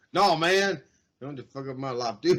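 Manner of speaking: put-on muttered aside. Retelling a movie scene, quoting Lawrence turning down an invite: Lawrence muttering under his breath. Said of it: "He kinda says it under his breath, but loud enough".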